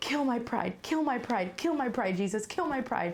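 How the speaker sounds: tearful, weeping crying plea, repeated over and over. Retelling praying alone in the bathroom: imitating own crying plea. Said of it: "crying and I was like".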